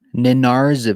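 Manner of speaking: slow, careful, falling delivery.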